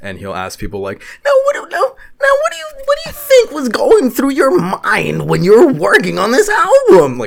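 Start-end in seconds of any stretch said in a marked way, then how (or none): 1.2-7.2 very high, swooping, stumbling, annoying voice. Imitating an interviewer asking a question about an album: Nardwuar voice. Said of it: "he literally fucking sounds like that".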